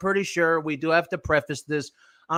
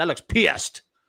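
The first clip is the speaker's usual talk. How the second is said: playful put-on Texas accent. Speaker commenting on the look on her face, repeating it in a Texas accent. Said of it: "And I say that with a Texas accent".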